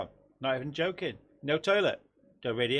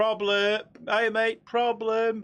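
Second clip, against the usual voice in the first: raised, high, drawn-out shout; 7 semitones higher, 3 dB louder than usual. Telling a story about a mate shouting from the toilet, retelling a friend's shout. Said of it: "And then shouts".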